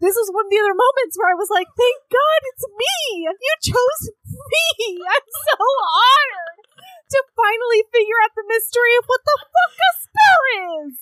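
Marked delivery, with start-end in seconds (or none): 1.7-10.9 excited shouting, higher pitch. Retelling an excited reaction to being chosen: retelling a past reaction, yelling. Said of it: "I'm so sorry that I yelled at you just now".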